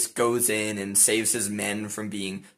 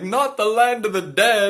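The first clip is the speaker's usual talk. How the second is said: put-on shrill, very high, loud childish tantrum wail; 12 semitones higher, 8 dB louder than usual. Retelling the men's reaction to the order, imitating men screaming in a tantrum. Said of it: "fall to the ground crying and kicking and screaming".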